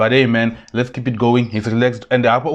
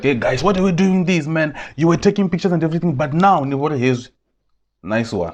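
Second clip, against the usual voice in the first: put-on raised voice, higher; 5 semitones higher than usual. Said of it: "He raised his voice like".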